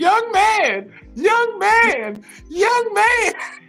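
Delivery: shrill, repeated holler, pitched way up. Retelling how a woman bringing food kept calling to him, imitating her yelling. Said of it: "she kept yelling".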